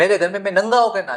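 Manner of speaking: high, fast, loud outburst. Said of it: "तो वो जोर से बोल पड़ा".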